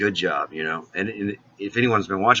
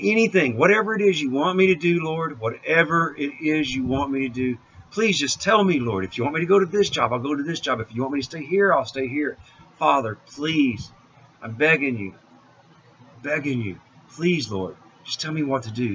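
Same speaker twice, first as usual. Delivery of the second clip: put-on high, pleading, begging voice; 7 semitones higher than usual. Retelling getting down on knees and begging God: retelling own begging prayer. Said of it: "I was begging to God".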